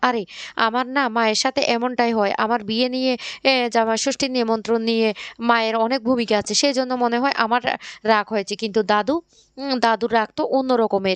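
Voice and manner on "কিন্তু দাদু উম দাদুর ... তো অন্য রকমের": plain reading voice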